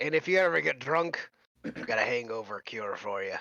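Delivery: put-on Russian accent in a character voice. Voicing the character Boris during a game, in a Russian accent. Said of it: "Is Boris Russian? Have I done a Russian accent".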